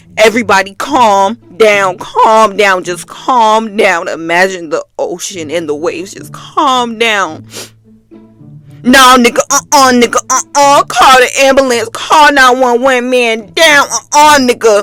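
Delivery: ordinary talk, nothing marked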